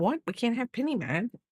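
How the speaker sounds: high, squeaky little dog voice, pitched high. Voicing the dog Biscuit for the viewers: speaking as Biscuit the dog. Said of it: "He's like".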